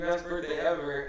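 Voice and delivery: ordinary talk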